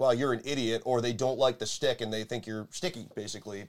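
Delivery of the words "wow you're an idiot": ordinary talk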